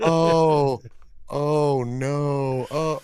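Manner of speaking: mellow, unbothered. Retelling how the passenger reacted to the car fishtailing: imitating a calm passenger. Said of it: "But she sounds so calm about it".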